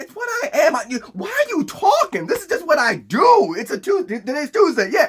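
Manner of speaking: high, casual, laughing villain voice. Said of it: "Doomsday's like".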